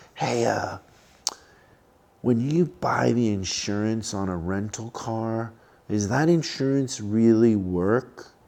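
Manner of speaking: slow, secretive, hushed, barely audible half-whisper. Retelling a woman pulling them aside to ask something, imitating her half-whisper. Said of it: "she whispers to me".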